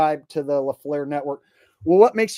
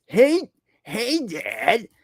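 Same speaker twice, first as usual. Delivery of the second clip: higher-pitched put-on cartoonish teenager voice; 10 semitones higher than usual. Trying to recall a cartoon family's voices, greeting a father character; do an impression of a cartoon teen son. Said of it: "Peter Griffin".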